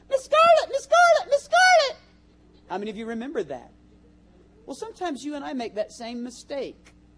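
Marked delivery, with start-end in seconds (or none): 0.1-1.9 mock, very high, very loud, shrill, frantic, hysterical calling. Speaker recalling a character from Gone with the Wind, imitating the hysterical announcing. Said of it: "announce wildly in a hysterical voice".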